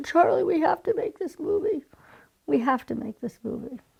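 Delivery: high, tearful, urgent crying voice. Retelling own past words while crying: retelling a tearful plea. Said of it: "I'm crying my eyes out".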